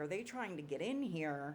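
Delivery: normal talking voice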